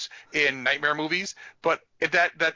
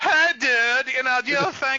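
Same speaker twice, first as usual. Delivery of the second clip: put-on irritating voice, much higher pitch; 9 semitones higher, 4 dB louder than usual. Retelling what someone said to you, imitating him doing an annoying voice. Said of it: "him doing like an annoying voice".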